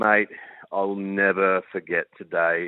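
bone-tired, weary, worn-down delivery. Retelling what an Aussie fan in the crowd told an interviewer, imitating a weary voice. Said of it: "real weariness in his voice".

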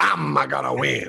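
rough, creaky, raspy cartoon villain voice. Explaining why they like playing as Wario, doing a Wario impression. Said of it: "Two outstanding impersonations of Wario".

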